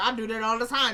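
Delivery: normal talking voice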